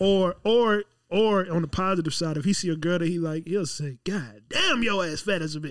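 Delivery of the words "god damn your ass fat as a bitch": bold, animated, swooping buddy voice. Imitating David complimenting a girl he likes: imitating David. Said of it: "that's my impersonation of him".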